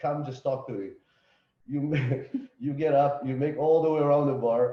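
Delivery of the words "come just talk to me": coaxing, begging, pleading tone. Describing a girl at a bar begging to be spoken to: imitating begging. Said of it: "she's like begging".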